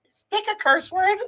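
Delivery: put-on very high, sweet seven-year-old boy voice. Father retelling his young son's question asked in the car: sweet little kid's voice. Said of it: "he still has like a sweet little 7-year-old voice".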